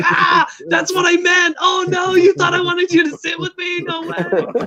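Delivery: laughing through the words, very high. Retelling a guy bursting out laughing at a misunderstanding: imitating Danny laughing while talking. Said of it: "And he starts busting up".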